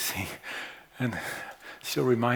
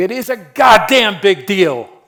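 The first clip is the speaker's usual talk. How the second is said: very loud, very slow, drawn-out raging scream; 9 semitones higher, 19 dB louder than usual. Retelling how a patient with AIDS answered: imitating a patient screaming. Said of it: "he screamed at me".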